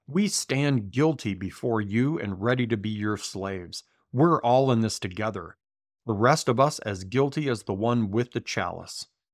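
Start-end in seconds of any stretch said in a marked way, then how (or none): none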